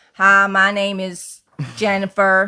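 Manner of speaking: put-on American accent. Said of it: "go from a".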